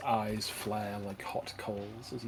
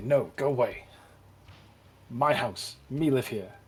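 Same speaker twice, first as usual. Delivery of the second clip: very loud, slow, savage, vicious creature snap; 10 dB louder than usual. Voicing a creature telling the visitors to leave its house, snapping viciously. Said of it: "It would snap viciously and say".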